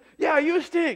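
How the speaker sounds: furious screaming, high and loud. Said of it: "the one guy was screaming".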